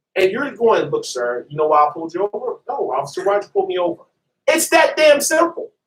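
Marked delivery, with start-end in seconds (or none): 0.9-2.6 calm, even, low, polite voice. Acting out a police officer addressing a driver he pulled over: calm officer voice. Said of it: "you're doing it in a calm voice".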